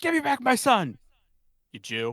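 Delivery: high, swooping, loud, drawn-out yell. Retelling a movie phone scene, imitating Mel Gibson yelling. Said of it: "yells at the guy and he's like".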